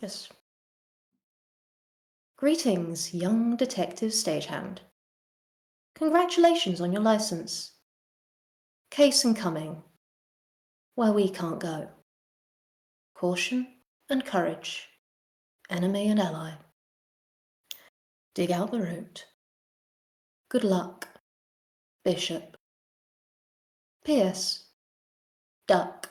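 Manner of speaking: low, flat, completely toneless monotone. A voice greets a young detective stagehand with a case: completely monotone voice. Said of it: "And then this completely monotone voice".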